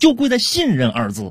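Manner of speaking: high, wide, defensive voice.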